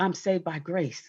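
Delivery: little, humble, shrunk-down, small, soft voice. The speaker acts out what they say after admitting sin, in a small voice. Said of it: "and then in the small voice".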